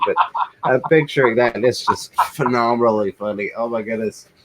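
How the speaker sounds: words breaking up with laughter throughout. Reading out a viewer's comment, laughing while talking. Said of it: "I can't stop laughing".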